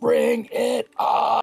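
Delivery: very loud, very high, rough, defiant shout. His character throws his head back atop the tower, shouting as loud as possible. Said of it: "he just shouts".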